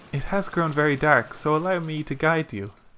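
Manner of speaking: ordinary delivery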